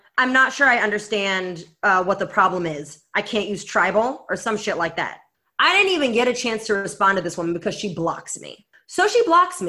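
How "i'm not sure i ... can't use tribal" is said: ordinary talk, nothing marked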